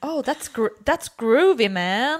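put-on spaced-out seventies San Francisco old hippie voice. Describing a friend's dad visiting from the US, imitating an old hippie voice. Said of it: "en så här gammal hippie från San Francisco som pratar lite så här".

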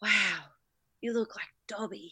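low, awestruck mutter under the breath. Retelling what you said to a police officer: said under the breath. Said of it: "Just sort of under my breath".

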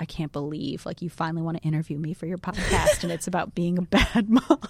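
put-on cute voice. Quoting the mom who agreed to be interviewed for the podcast: retelling a cute remark. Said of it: "she cutely was like".

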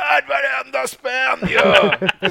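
re-enacted shout. Speaker recalls someone at the back of the venue after a goal, retelling a shout. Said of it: "någon som skrek så här".

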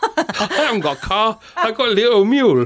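terrible fake Japanese accent, very high pitch. John retells a man's reply, doing him in a bad put-on Japanese accent. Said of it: "Doing him as a Japanese man".

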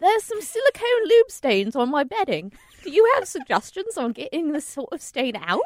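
muddled British-Australian mix of an accent. Reading Steven's question aloud, in a Mary Poppins chimney sweep accent. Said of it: "Are you a chimney sweep from Mary Poppins?".

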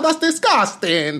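imitated Italian woman's accent. Retelling an Italian woman's reaction to seeing the tattoo, in an Italian accent. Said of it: "That's my Italian accent".

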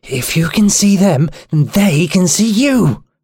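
hissed through the teeth. A narrator reads a woman's reply to the narrator, hissing. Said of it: "She hissed".

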